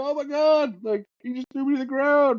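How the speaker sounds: very high, sobbing, whiny fake-cry wail. Acting out the kids flopping like it's the NBA, imitating fake crying. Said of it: "Starts like fake".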